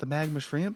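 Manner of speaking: shy, quiet, timid mousy little voice. Narrating a scene, voicing a woman who walks over to the party, shy, quiet mousy voice. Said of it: "a very like almost mousy, she looks very shy, very quiet".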